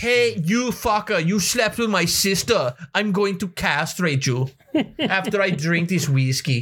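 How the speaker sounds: put-on Polish accent, half German, half Russian. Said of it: "It's like somewhat German, somewhat Russian-ish".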